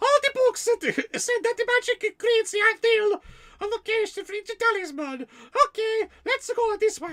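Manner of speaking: very high, squeaky voice with Italian accent. Reading a story line from a chat suggestion: Italian Mickey Mouse voice. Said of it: "this voice is coming from Diablo, Italian Mickey Mouse".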